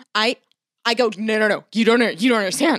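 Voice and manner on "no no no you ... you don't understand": normal talking voice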